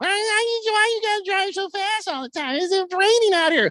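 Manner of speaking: very high, put-on fifties housewife voice. Speaker imagines a woman in a car in the fifties, in a fake woman's voice. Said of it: "Your fake chick voice".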